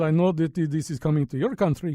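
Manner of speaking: put-on Russian accent. Speaker retells a Russian-speaking man's words, put-on Russian accent. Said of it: "Why am I doing him in an accent?".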